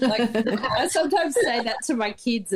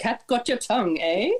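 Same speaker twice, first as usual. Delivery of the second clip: ordinary talk, nothing marked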